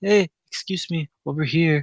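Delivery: put-on heavy Costa Rican accent. Retelling a lady calling over to the group, imitating thick Costa Rican accent. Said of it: "she had a really thick accent".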